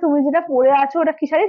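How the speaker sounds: ordinary delivery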